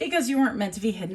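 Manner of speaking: fast speech broken up by laughing. Passing on what Spirit is saying, laughing while talking. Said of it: "I'm sorry I'm laughing".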